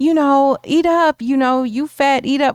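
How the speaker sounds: acted sweet, coaxing tone. Retelling a movie fantasy scene where the mother speaks: imitating a mother's nice voice.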